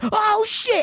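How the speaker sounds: put-on, very high, frightened, panicked blurt. Recounting hearing strange sounds from a corner: retelling a panicked exclamation. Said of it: "and I'm like freaking out".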